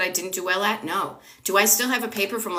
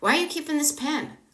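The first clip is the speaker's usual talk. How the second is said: warm, loving, curious voice, lightly raised; 7 semitones higher than usual. Showing how the same words change with energy, loving tone. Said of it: "in a loving energy".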